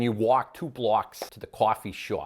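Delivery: clumsy put-on New York accent, partly Boston-sounding. Giving an example of american usage: attempted new york accent. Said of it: "you almost sounded more Boston".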